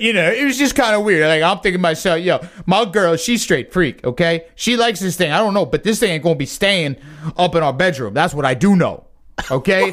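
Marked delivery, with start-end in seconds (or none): none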